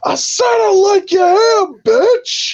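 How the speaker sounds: very high, shrill, hollered outburst. Retelling what a man yelled at a woman who ignored him: retelling a yell. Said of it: "and he just yells out".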